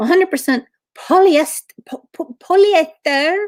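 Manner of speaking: bad Brazilian accent, stumbling. Reading the label on a fabric tag aloud: bad Brazilian accent. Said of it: "I don't know how to do a Brazilian accent".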